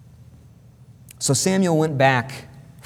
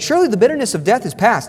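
high, fast, cheerful, chipper chirp. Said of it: "He's all cheerful".

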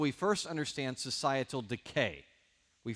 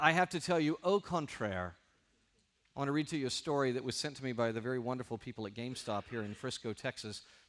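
ordinary delivery

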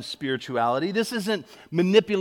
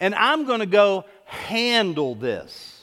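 put-on deliberate Southern accent. Retelling what a Southern mom said to her family, Southern accent. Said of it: "I heard this Southern mom say to her family".

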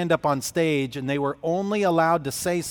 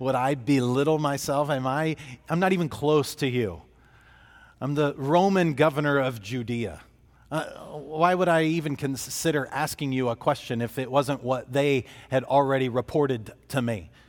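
ordinary talk

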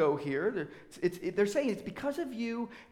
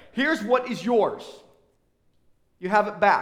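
mock contemptuous, disdainful tone, louder; 8 dB louder than usual. Reading the servant handing the talent back to the master: acting out disdain and contempt. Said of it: "you can just hear the disdain and the contempt".

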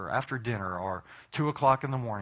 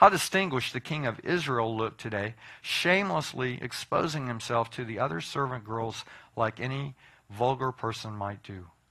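normal talking voice

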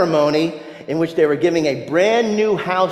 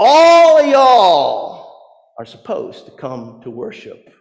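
loud, swooping put-on Southern drawl, "y'all" drawn out; 3 semitones higher, 6 dB louder than usual. Quoting another man's line during a talk on worship: best Southern accent. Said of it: "In his best Southern accent".

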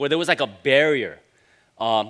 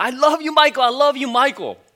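very high, shrill, adoring repeated yelling; 10 semitones higher, 6 dB louder than usual. Retelling how a louder friend yelled at a celebrity passing by: imitating a friend yelling. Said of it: "he just kept on yelling".

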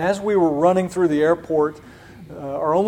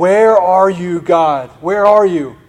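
mock wailing, imitating a woman's wail; 6 dB louder than usual. Recalling a woman on her knees amid the chaos, imitating her wailing. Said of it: "she's just on her knees wailing".

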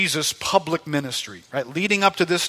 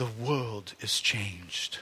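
soft, hushed, put-on English narrator's accent; 6 semitones lower, 12 dB quieter than usual. Reading a passage aloud with imagined violin behind, the speaker does her narration in an english accent. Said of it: "I'm going to try and do her narration as an English man".

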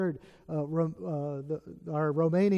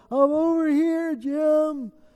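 very high, very slow, loud, drawn-out holler; 11 semitones higher, 7 dB louder than usual. Retelling answering a brother's shouts from the trail, retelling own hollering back. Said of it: "we're hollering back and forth".

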